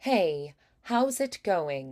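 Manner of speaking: slow transatlantic voice with slight British lilt. Teaching a crisper greeting, the speaker demonstrates a slight british inflection. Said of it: "we want a little bit of that inflection".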